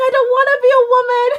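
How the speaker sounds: high tearful sob-talk. Retelling being told about becoming a woman: imitating own past crying. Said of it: "I started crying and I'm like".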